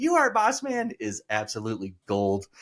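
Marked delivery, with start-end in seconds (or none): 0.0-0.9 very high, shrill yell. Recounting the match, act out Lawler yelling back at Boss Man: Jerry Lawler's high-pitched yell. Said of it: "yelling back in his high pitched voice".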